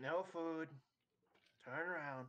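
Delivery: high-pitched goblin creature voice. Game master voicing a goblin for the players, goblin voice. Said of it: "the goblin just kind of nods".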